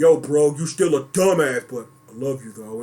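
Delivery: very low, dumb-sounding deep voice.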